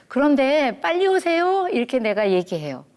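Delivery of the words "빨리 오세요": sweet, pretty voice, very high-pitched. Wife retelling how she told her husband to come back soon: pretty voice of younger days. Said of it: "옛날에 예쁜 목소리로".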